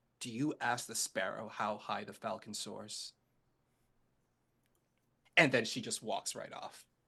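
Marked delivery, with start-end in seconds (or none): 0.2-3.1 the coldest, chilling, ice-cold voice. Voicing Inez answering a teammate without turning around: coldest of voices. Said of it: "with the most coldest of voices".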